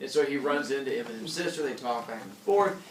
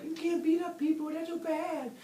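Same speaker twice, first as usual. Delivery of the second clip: much higher, squealing, freaked-out voice. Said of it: "Eminem freaks out".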